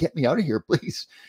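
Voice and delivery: slow, drawn-out pleading yell. Retelling being stuck in the tube and yelling at the young women, retelling a yell. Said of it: "I finally had to yell at them and say".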